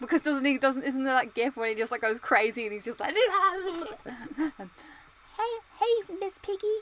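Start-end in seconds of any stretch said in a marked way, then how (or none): 3.1-6.8 very high puppet voice, words dragged out. Speaker tries the only Muppet impression they can do: Kermit the Frog impression. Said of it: "I can only do the Kermit the Frog impression".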